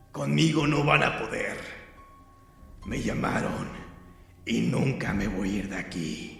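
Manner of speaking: rough, hoarse, hollow cavernous rasp. Narrating the woman whose face has changed, shouting at the teacher, hoarse cavernous shout. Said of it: "hablando con voz ronca y cavernosa, le gritó".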